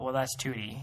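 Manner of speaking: flat, level monotone with no rise. Speaker retells a man's explanation to a kid, in a monotone. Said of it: "in such a monotone".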